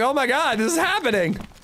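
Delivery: acted stunned shock. Retelling hearing of the pregnancy: retelling his stunned reaction. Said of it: "didn't know what to say".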